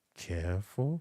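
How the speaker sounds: mutter under the breath. Retelling a rabbi's warning in the crowd: imitating a mutter under the breath. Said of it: "Rabbi Yusuf under his breath say".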